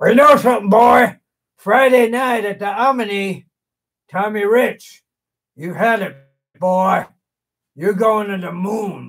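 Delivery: very slow, drawn-out, stretched delivery of every word. Answering an interviewer's question about Tommy Rich: imitating Mister Wrestling II. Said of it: "ask me what I'm gonna do to Tommy Rich".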